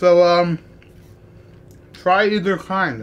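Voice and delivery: talking with mouth full. Recommending both kinds to viewers while eating, talking while eating. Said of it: "I'm eating with my mouth".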